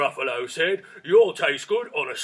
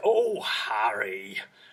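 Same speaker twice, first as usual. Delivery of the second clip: Mummerset bumpkin accent, "Harry" drawn out; 8 semitones lower, 3 dB quieter than usual. Showing how Hagrid is performed, the speaker does Hagrid's Mummerset accent. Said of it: "he does it in what you would call a Mummerset accent".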